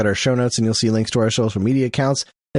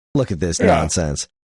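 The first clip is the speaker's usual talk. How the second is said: put-on scornful voice, lower; 7 semitones lower than usual. Retelling own younger self hate-watching a show: imitating own scornful younger self. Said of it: "I would almost hate watch it because I was such a Nintendo goon".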